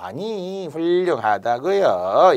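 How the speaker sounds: slow, drawn-out sarcastic delivery. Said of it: "이렇게 비꼬듯이 또 말하면".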